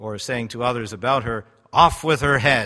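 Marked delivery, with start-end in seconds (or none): 1.7-2.7 loud, bellowed royal voice. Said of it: "the Queen of Hearts saying to Alice".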